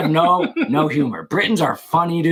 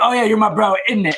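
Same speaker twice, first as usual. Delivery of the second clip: put-on faint British accent, much higher pitch; 6 semitones higher than usual. Imitating what british gamers were saying, hinted british accent. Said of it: "still hinting at their British accent".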